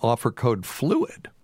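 pitch breaking mid-phrase. Reading out an offer code for headphones, voice cracking. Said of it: "my voice cracked".

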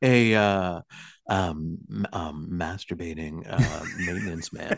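low, hushed, close-mic, stumbling, halting mumble. Mimicking another speaker who leaned into the mic: imitating a low voice into the mic. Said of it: "you leaned down into the mic, and you're like".

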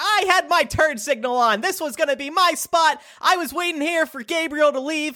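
shrill, very high, argumentative, complaining yell. Retelling a parking spot argument when asked for an impersonation: imitating a woman yelling. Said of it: "Can you do an impersonation?".

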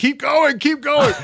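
mock screaming, high and urgent. Recalling a shoot, the speaker reenacts urging someone to continue: re-enacting screaming. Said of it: "just screaming at Ken".

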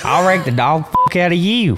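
put-on South Boston accent. Saying a line another speaker asked for: Jeff Burton impression. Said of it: "Did that sound like him?".

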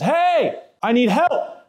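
play-acted very high, very slow, drawn-out panicked yell. Retelling how a man in the cell yelled out to the guard: retelling a panicked yell. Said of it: "he started to yell like real panicked like".

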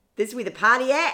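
shouted, high, put-on Australian accent attempt. Retelling what someone yelled across the room, in a put-on Australian accent. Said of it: "What's my Australian accent?".

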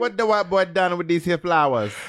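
high-pitched, put-on West Indian accent. Retelling someone's remark to co-hosts, in a West Indian accent. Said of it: "Was that a good West Indian?".

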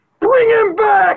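mock, piercing, very high scream. Speaker retells a crowd scene, imitating a man who starts screaming. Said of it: "He starts screaming".

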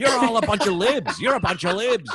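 screaming, mock, high-pitched and very loud.

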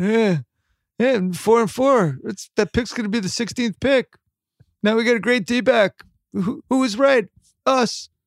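whiny sports fan voice. Mocking a generic Pittsburgh fan bragging about his team: imitating a whiny Pittsburgh fan. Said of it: "just generic whiny Pittsburgh fan".

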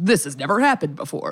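deep movie-trailer voiceover. Describing a favorite kind of movie trailer, doing the deep trailer voiceover. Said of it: "man with a deep voice kind of doing the VO".

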